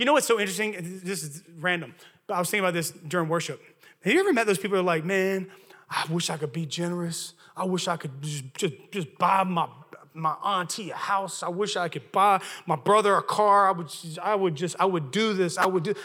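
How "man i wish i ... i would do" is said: put-on slow Southern US accent, Louisiana flavoured. Imitating people who wish they could be generous, in a southern accent. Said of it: "that sounded so Southern".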